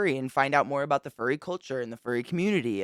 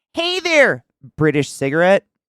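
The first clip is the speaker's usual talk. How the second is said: adorable little yell, very loud; 3 semitones higher, 10 dB louder than usual. Speaker retells a vending machine that shouted when passed too close; imitating an adorable shout. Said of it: "it would shout in a very adorable voice".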